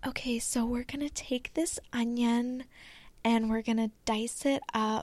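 soft cooking-video voiceover narration voice. Showing the voice they used narrating their old recipe reels, recipe reel voiceover voice. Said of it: "the voice that I used in my old reels".

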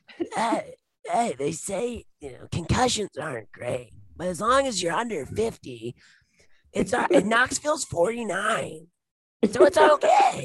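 very high stuntman voice with wide swinging pitch. Introducing a new impression to the others: Steve-O voice. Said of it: "That might be my new best impression".

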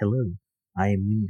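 put-on soothing, chill voice. Imitating how Minya first talks in the movie: soothing chill Minya voice. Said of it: "super soothing, chill voice".

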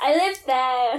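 acted, mild, held-back small half-shout. Retelling the time of shouting at a friend's dad: retelling a shout. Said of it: "I had to shout at your dad one time".

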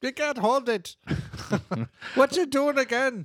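very high inner scream. Retelling an inner monologue after a strong drink: Scotty from Star Trek voice. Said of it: "screaming at me like Scotty from Star Trek".

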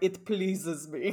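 put-on, formal-sounding Italian accent. Imitating how a man spoke very formal English, in a put-on Italian accent. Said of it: "like in an Italian accent".

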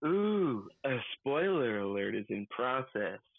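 fake sultry voice, very low, slow, drawn out. Suggesting a sound effect to edit in: put-on sexy voice. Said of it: "another sexy voice like".

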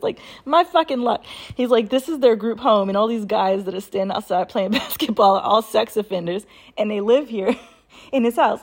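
talking through laughter. Telling a friend's story about a group home, laughing while telling. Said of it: "I'm sorry, I'm laughing at this".

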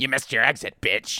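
possessed-demon voice, horror-movie style. Imagining the film's demon giving map directions, in the demon's voice. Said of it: "I want the demon's voice to be my Siri".

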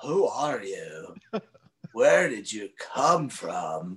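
low, dropped voice. Speaker retells what Paul said on meeting them, imitating Paul's voice. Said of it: "again, with that voice".

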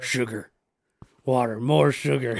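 bug-man creature voice, alien insect character. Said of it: "Matt used to do his voice".

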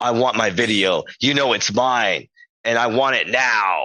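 slow, insistent, demanding voice. Retelling a demanding text from Rob: imitating Rob demanding. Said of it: "That's a good impression".

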